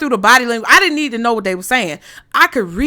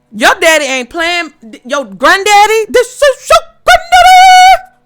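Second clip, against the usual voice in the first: loud, very high, swooping excited hollering; 9 semitones higher, 7 dB louder than usual. Addressing listeners, some wearing headphones: loud. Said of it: "I know I'm being loud".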